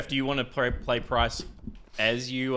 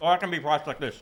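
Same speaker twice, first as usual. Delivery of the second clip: talking through a mouthful, higher pitch; 3 semitones higher than usual. While finishing some cheese before the others go, talking with mouth full.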